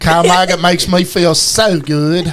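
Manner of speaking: put-on British- or Canadian-sounding accent. Joking in a group about Kyle Maggart: British- or Canadian-sounding accent. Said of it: "That sounded like a Canadian or a British person".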